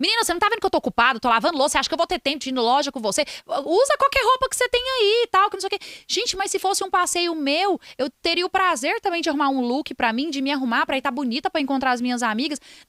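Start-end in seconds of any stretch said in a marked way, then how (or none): 0.0-5.8 high, rising, reactive scolding, acted out. Acting out what a toxic, reactive mother could say: imitating a toxic, reactive mother. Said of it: "como uma mãe tóxica, reativa".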